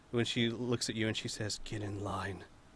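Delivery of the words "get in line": dead serious anger. Narrating a scene, voicing a character as she gets back up: serious, angry voice. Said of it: "most serious and angry you've ever heard it".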